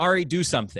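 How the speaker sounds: mock high pleading yell through tears. Retelling how mom yelled during a drowning scare: imitating mom yelling. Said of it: "she yells at me".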